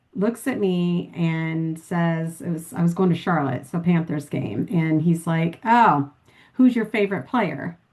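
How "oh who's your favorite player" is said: mocking, sarcastic delivery through a chuckle. Retelling a guy's question on a plane: imitating someone chuckling sarcastically. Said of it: "he's chuckling when he's saying this".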